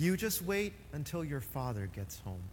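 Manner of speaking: very calm, cool, composed, even delivery. Retelling how his mother reacted to his quiz, the speaker quotes her in a very calm voice. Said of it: "she said in a very calm voice".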